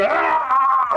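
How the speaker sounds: very high, long, drawn-out, panicked shriek. Retelling how the group reacted in the fight: imitating screaming in panic. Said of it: "screaming around like idiots".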